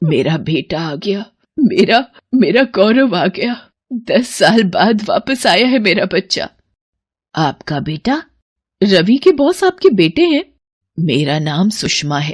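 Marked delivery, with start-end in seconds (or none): 0.0-6.5 tearful speech, sobbing through the words. Answering why she is crying, as her son returns after ten years: crying while talking. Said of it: "आप रो क्यों रही हो?".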